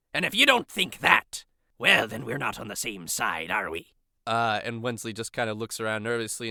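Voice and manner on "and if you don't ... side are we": put-on pirate captain voice, lower pitch. Voicing a pirate captain who refuses to give up the prize: pirate captain Kagarkwa voice. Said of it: "Kagarkwa says".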